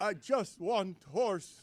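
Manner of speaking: soft, low, slow voice, near sobbing. Asked about his impression, the speaker repeats his fake Jokić, mock near-sobbing. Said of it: "I sound like I'm about to start sobbing".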